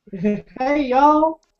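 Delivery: fake, very high-pitched southern drawl. Joking about visiting America, the speaker imagines greeting people: put-on southern drawl. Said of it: "Come back with a southern drawl".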